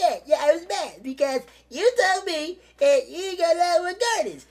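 very high-pitched, put-on woman's voice. Quoting a woman in a story about Longwood Gardens, imitating her voice. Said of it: "I got to do her voice because that's how the fuck she sounds".

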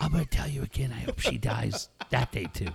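gruff put-on whisper. Retelling how the speaker kept whispering to a man to creep him out, Batman-like whisper. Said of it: "you sound like Batman".

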